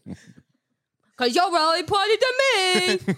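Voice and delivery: very high-pitched goofy voice. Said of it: "like, funny voices".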